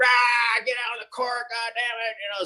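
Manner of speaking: put-on yelling. Remembering his old basketball coach, imitating Lynn Wilder yelling. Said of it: "he yelled".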